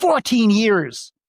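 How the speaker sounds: mock angry voice. Retelling a man's reply after being asked to repeat himself, retelling an angry reply. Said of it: "he gets really angry".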